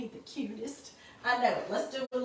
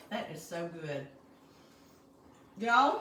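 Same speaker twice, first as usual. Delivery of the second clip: talking with mouth full, pitched lower; 4 semitones lower than usual. Eating macaroni on camera and talking to viewers, with a mouth full. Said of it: "I got my mouth full".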